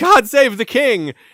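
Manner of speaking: high drawn-out loud yell. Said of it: "someone yelled out".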